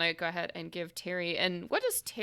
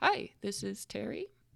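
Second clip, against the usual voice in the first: mild, gentle voice; 3 semitones higher, 4 dB quieter than usual. Retelling a phone call, imitating Terry's gentle voice answering. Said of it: "you hear Terry's sort of gentle voice over the phone".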